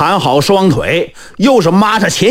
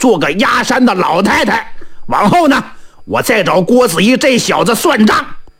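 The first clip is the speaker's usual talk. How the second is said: ordinary delivery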